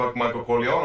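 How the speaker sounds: ordinary talk, nothing marked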